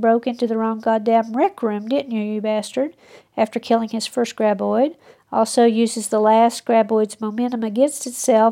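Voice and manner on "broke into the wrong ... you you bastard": usual speaking voice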